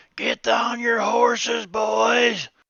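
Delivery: put-on shrill, very loud, high holler, "boys" stretched. Narrating a scene, voicing a stranger's call to the group: loud holler. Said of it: "You hear a voice real loud holler".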